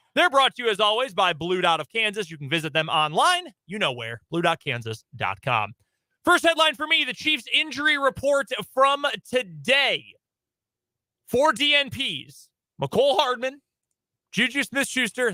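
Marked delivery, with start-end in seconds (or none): 12.8-15.3 voice cracks, jumping up high in pitch. Reading the team's injury report aloud, voice cracks. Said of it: "That was a bad voice crack just now".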